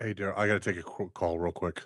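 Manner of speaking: very low, earnest, serious straight tone. Speaker on a show tells Daryl he must take a call, in a serious voice. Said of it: "Y'all heard his serious voice?".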